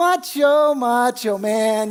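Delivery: put-on mocking, teasing voice. Retelling how a nurse teased a crying stabbing victim: imitating a nurse mocking. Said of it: "just mocking this guy".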